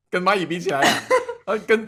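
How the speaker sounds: high, loud laughing tease.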